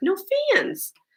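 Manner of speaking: put-on high voice with thick Lowell accent. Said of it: "amazingly thick Lowell accent".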